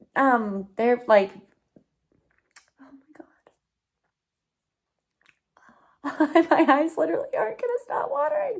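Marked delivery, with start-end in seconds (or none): 2.7-8.6 high, swooping tearful talk through tears. Reacting alone to kind words from people, crying while talking. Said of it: "I literally can't even stop crying".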